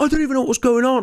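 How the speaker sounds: very high, sobbing, pleading crying whimper. Retelling what an injured man said after a fight: imitating someone crying. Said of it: "crying and going".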